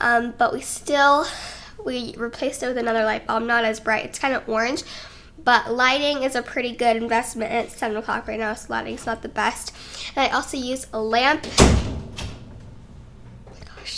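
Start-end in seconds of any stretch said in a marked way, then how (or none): 11.6-14.0 startled, hushed whisper. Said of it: "that scared me".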